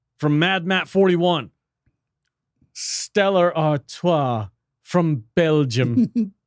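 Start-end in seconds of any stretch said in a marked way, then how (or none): 2.7-6.3 slow, drawn-out French accent. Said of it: "Why are you reading that in a French accent?".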